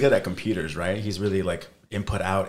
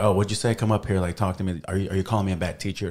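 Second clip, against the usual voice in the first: normal talking voice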